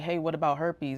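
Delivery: ordinary delivery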